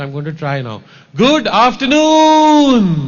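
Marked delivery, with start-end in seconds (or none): 1.2-3.1 loud, rousing, pitched up, afternoon stretched out. Speaker greets an audience after lunch and wants them to reply: loud, energetic voice. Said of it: "in loud, energetic voice".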